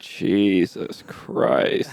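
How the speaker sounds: put-on muttering under the breath. Retelling how grandpa reacts to a fatter person: imitating muttering under his breath. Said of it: "under his breath".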